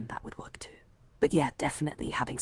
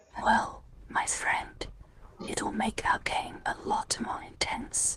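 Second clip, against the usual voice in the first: hushed whisper, higher pitch. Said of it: "Why are we whispering?".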